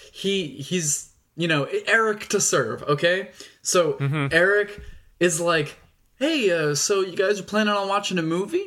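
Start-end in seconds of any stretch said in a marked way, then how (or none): 6.2-8.6 play-acted passive-aggressive tone. Retelling a character's question to a girl's date: imitating a passive-aggressive tone. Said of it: "he very passive-aggressively".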